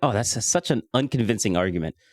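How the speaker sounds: ordinary delivery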